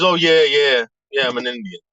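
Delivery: weird, exaggerated Southern twang. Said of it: "this weird, like, Southern ta-, uh, twang".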